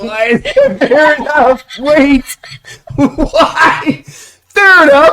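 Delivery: shouting. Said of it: "Stop yelling at me".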